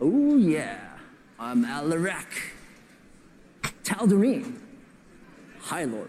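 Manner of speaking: puffed-up, self-important, arrogant bragging tone. Showing how Alarak brags about himself: mock-arrogant Alarak brag. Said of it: "Or he's really arrogant and bragging like this".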